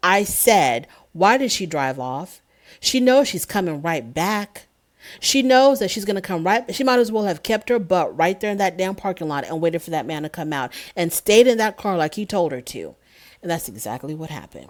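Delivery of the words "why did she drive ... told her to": normal talking voice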